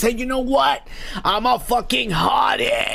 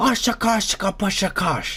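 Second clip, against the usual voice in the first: poor, fake put-on British accent. Telling about a guy owing back taxes, the speaker tries his voice: bad British impersonation. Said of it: "That's my British impersonation".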